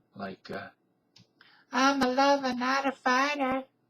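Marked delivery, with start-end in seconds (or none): 1.7-3.7 very high, put-on effeminate stage voice. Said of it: "much higher and much more effeminate".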